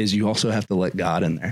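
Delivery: ordinary delivery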